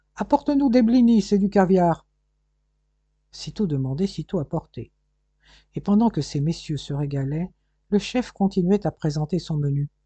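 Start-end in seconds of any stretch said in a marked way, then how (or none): 0.2-2.1 high shouted call. The chef calls out an order to Ludovico, shouting.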